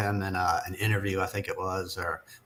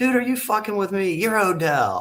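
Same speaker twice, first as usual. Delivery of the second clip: put-on very high, strong, drunk-sounding Southern accent; 12 semitones higher, 4 dB louder than usual. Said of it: "deep Southern accent that I have".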